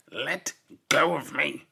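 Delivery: gruff, irritated, rough, loud growl. Narrator reads a man snapping at his companion, growled. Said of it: "Spittleworth growled at Flapoon".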